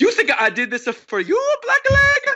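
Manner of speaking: exaggerated Italian accent. Speaker retelling a scene, quoting a character addressing Sanji in a stereotypical Italian accent. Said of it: "in my most stereotypical uh, Italian accent".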